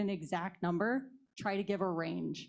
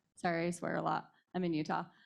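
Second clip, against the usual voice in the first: ordinary talk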